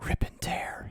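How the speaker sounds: breathy whisper, close into an ear. A player describes leaning into the wolf's ear, whispering. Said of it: "I whisper".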